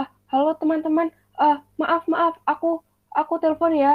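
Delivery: nervous, broken-up stammer with repeated words. Demonstrating a nervous group-call greeting in halting, broken-up speech. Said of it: "gitu menggunakan tempo bicara patah-patah dikaitkan dengan suasana hati yang gugup".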